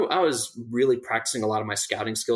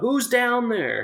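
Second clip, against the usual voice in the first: put-on, very high shouted call; 12 semitones higher, 3 dB louder than usual. Retelling how a man coming down the hill called out, retelling a yell. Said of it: "he just yelled out".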